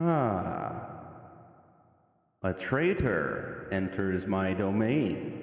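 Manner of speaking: ominous echoing voice with swooping pitch. Narrator voices a presence as Nye enters the chamber, ominous echoing voice. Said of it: "an ominous voice kind of echo throughout the chamber".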